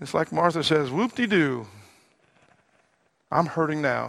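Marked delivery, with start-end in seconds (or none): 0.9-4.1 swooping, sarcastic, unimpressed sing-song. Retelling Martha's answer to Jesus about her dead brother: imitating Martha's sarcasm. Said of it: "I think sarcastically".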